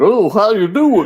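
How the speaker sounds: put-on stupid-sounding West Virginia accent. Retelling crossing the state line into West Virginia: stupid West Virginia accent. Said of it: "we were doing s-, stupid West Virginia accents".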